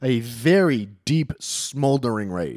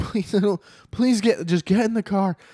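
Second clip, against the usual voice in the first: mock begging tone, very high-pitched pleading voice; 10 semitones higher than usual. Retelling a stepdad begging her to get in the car: imitating a man pleading. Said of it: "he's pleading with her".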